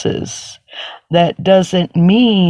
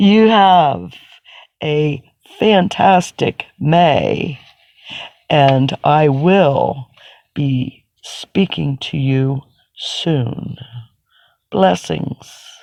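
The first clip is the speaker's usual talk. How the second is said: slow, deliberate, clearly enunciated speech; 2 semitones lower than usual. Closing a divination reading for an international audience, speaking slowly and distinctly. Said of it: "trying to speak slowly and distinctly".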